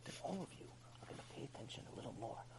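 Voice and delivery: hushed, very soft whisper. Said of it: "But if I start whispering".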